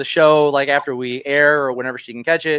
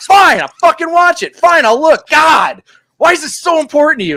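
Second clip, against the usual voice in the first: loud, high-pitched, put-on heated, angry voice; 13 semitones higher, 7 dB louder than usual. Retelling his partner's reply when pushed to finish an episode, imitating an angry retort. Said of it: "she got so mad at me".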